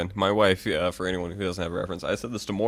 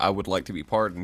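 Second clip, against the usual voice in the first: normal talking voice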